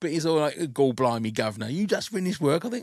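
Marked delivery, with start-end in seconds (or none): 0.8-2.6 put-on Cockney accent. Retelling what another santa says on walking in, in a cockney accent. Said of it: "sort of got a Cockney accent".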